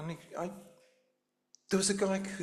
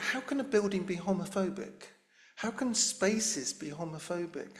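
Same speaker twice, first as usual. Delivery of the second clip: plain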